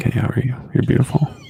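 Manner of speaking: speaking right into the microphone, close-mic. Showing how talking to the wife sounds: close talking into the mic. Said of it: "I actually do this shit to my wife".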